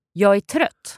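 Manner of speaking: rapid pace. Language lesson, demonstrating the fast version of a Swedish phrase, fast. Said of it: "And the fast one?".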